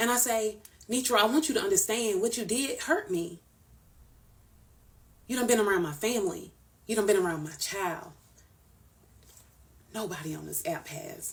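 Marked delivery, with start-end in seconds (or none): 0.9-11.3 mock heartfelt, emotional pleading tone. Retelling what was said to a friend who hurt them: retelling an emotional plea. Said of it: "And then I get emotional".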